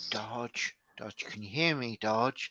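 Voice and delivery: steady, very hushed half-whisper under the breath. Speaker reenacts half-whispering to Dodge the whole time as a joke: half-whispering. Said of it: "I'm just whispering to him".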